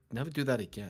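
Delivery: put-on, very serious voice. Retelling what a coworker said after a meme voice: imitating a very serious voice. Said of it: "in the most serious, beautiful voice".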